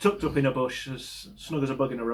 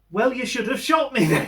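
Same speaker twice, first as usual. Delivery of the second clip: put-on, very high, shouted, raised voice; 10 semitones higher, 5 dB louder than usual. Retelling how he shouted back at a man stomping off, retelling own shout. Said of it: "So I just shout after him".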